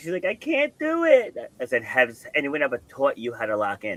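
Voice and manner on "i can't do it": put-on very high, very slow, drawn-out tearful crying. Speaker retelling what the person being coached said, imitating someone crying. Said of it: "And she's crying".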